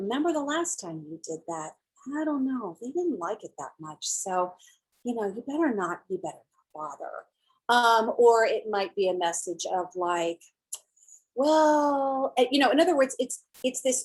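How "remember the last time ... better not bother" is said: soft, subtle, insidious, sinister voice. Demonstrating a controlling inner voice, in a sinister, subtle inner voice. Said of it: "It could be this voice".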